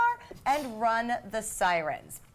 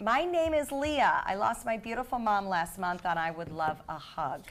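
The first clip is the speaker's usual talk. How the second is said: normal talking voice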